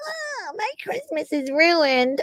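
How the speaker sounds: mock, petty crybaby whine, high and hushed. Mocking a chat commenter as a crybaby: imitating Diane mock-crying. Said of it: "You looked like a petty little crybaby crying".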